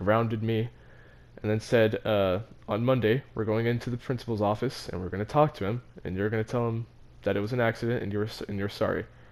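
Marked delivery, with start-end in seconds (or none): none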